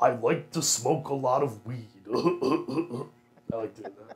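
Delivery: impression delivered with laughter.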